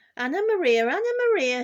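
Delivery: very high, loud, squeaky rat cry. Reading a story aloud, the rat calls out to Anna Maria, squeaking. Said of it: "squeaked the, the rat".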